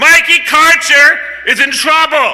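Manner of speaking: high, loud, rousing shout.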